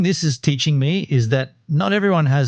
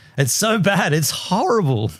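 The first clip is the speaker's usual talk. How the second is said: ordinary talk, nothing marked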